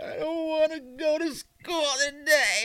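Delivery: put-on very high, drawn-out, sobbing kid voice. Retelling a daughter's wake-up complaint: imitating a child crying. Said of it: "She started, like, crying".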